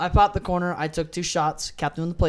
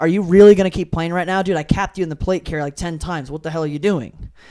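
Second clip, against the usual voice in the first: loud, raised, hounding, accusing yell; 7 dB louder than usual. Retelling how a player followed him around: imitating someone yelling. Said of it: "just yelling at me like".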